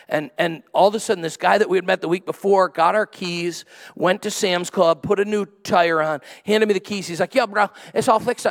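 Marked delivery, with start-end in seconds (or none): 7.3-8.5 strong put-on Southern accent, higher pitch. Retelling what a guy said after fixing the speaker's tire, in a super Southern accent. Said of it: "in super Southern dialect".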